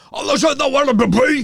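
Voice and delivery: put-on French with English accent. Joking about anglophones speaking French, the speaker does Mike Patterson's anglophone French. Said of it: "si eux devaient le faire en français, ça sonnerait comme ça aussi".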